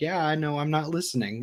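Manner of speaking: normal talking voice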